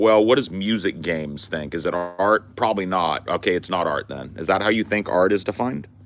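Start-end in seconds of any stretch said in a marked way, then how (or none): none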